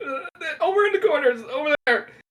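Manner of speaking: very high, scared, cowering whimpering stammer. Voicing a cowering shopkeeper telling the others where the bandages are: cowering, frightened voice. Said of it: "cowers away again and hides, and he goes".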